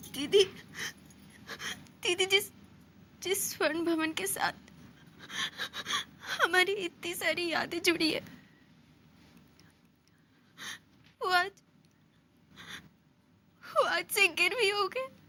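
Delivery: talking while crying, weeping. Telling didi painful news after being asked why she is crying: crying while talking. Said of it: "ये रोना बंद करो और मुझे बताओ".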